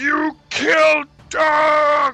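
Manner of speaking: yelling in a giant voice. Voicing a wounded Verbeeg struck by a javelin, yelling as the Verbeeg. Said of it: "it just sort of yells".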